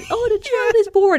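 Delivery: very high, evil, gloating cartoon-villain voice. Retelling a film scene, imitating the Marquis gloating evilly. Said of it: "he laughs very evilly when the child is born".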